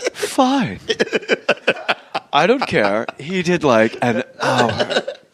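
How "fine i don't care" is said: low, swooping, teasing parody voice. Teasing the other speaker by imitating his reply: imitating the other speaker. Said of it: "You went".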